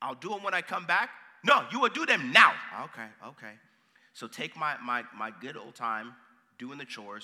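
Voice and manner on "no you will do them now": put-on stern Nigerian accent, high and very loud. Retelling sneaking out to play, quoting a parent, imitating parent's nigerian accent. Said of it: "hence the accent".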